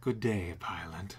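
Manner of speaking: smooth, low, soft, alluring seductive voice. Voicing a character greeting a pilot, seductive voice. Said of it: "How seductive can I make this?".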